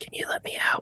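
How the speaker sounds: hushed whisper. Voicing a character the player hears asking to be let out, whispering. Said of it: "the thing that you had to whisper".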